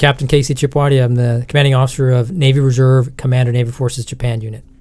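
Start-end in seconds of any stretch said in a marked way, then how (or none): none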